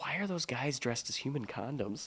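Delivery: very quiet, hushed whispered aside. Retelling what a wife whispered while standing in line: imitating a whisper. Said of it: "whispers to me, she goes".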